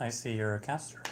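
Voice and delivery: ordinary talk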